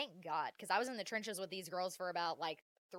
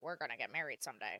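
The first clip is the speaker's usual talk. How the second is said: put-on cartoon character voice; 6 semitones lower than usual. Recounting a boy saying they would marry someday: Squidward voice. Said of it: "it was in his Squidward voice, and it was like this".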